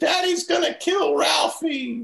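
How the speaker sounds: very high, mock sobbing little boy voice. Retelling Randy hiding under the sink, scared of dad: imitating Randy crying. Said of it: "He's crying".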